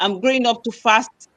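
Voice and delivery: ordinary talk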